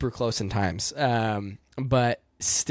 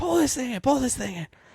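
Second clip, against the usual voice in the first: very high-pitched screaming delivery; 13 semitones higher than usual. Retelling an in-car instructor's reaction on the track: imitating Doug screaming. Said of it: "he is screaming at me".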